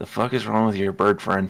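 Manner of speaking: hushed, in-character half-whisper under the breath. Voicing a character who leans over to another character: half-whispering in character. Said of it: "whispers to".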